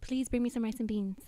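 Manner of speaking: put-on talking like an old grandmother. Showing how abuela really sounds: imitating abuela's voice. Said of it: "how's she sound?".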